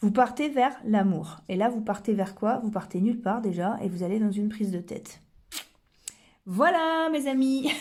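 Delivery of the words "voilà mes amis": mock triumphant, victorious, winning tone. Closing her explanation in a triumphant victor's tone. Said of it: "Dit-elle sur le ton euh, de, de, du vainqueur".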